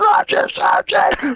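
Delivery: high, slow screamed soldier's voice.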